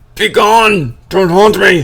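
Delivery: very loud, high, rattled, agitated pleading shout. Voicing a character heard from below a trapdoor: agitated Roman voice. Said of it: "a little more agitated than you've ever heard it".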